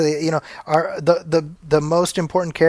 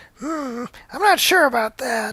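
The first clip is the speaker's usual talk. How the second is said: very high, slow, drawn-out cartoon mom voice; 10 semitones higher than usual. Retelling what a wife said about kids watching: Marge Simpson voice. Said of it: "in pure Marge Simpson fashion".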